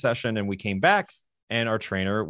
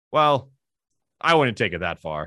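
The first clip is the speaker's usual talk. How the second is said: mock-deadpan, flat delivery; 4 dB louder than usual. Retelling a man's answer to a question, the speaker imitates a deadpan reply. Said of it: "And like deadpan this entire".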